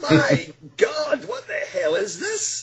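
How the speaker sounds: put-on startled, drawn-out, mild scream-like exclamation. Retelling seeing glowing lights around a woman: retelling a scream. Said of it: "I screamed out like a big girl".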